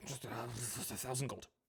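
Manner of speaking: mumbling under the breath. Acting out what a character mutters after a roll of twenty-one, mutter under the breath. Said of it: "mutter under his breath".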